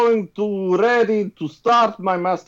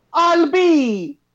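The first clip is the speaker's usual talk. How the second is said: abrupt exclaiming, higher pitch; 8 semitones higher than usual. Reading Mario's line in a group story reading: exclaiming. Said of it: "he exclaims".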